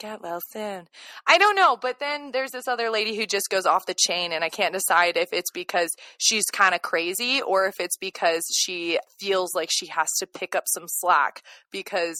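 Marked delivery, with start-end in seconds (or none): 0.0-0.8 hushed, soft, eerie, creepy put-on voice. Imagining a show character standing over someone at night: imitating a creepy voice. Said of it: "It's creepy, and she's gonna be standing over you like".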